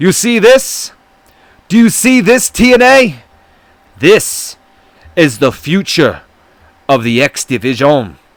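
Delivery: horrendous, bad, put-on fake Spanish accent.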